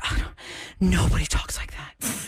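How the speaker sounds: put-on, exasperated delivery. Retelling a sister's reaction to a formal exam question: imitating someone exasperated. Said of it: "she just was exasperated".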